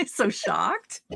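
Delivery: slow, exaggerated mock shock.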